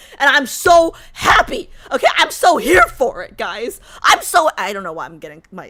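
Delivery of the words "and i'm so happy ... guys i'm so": worked-up, overwhelmed, very loud, swooping gush. Talking about a story's happy ending to a group, worked up. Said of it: "I'm getting myself so worked up".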